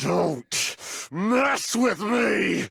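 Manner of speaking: angry, furious shouting. Voiced game character objecting in a trial: angry shout. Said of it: "he's pissed".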